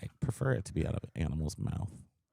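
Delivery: creaky vocal fry. In a casual recorded conversation, speaking with vocal fry. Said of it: "I feel like I have vocal fry".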